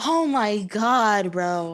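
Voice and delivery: exasperated, irritated, very slow drawl. Retelling what a game character just said: imitating someone irritated. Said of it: "why is bro getting irritated?".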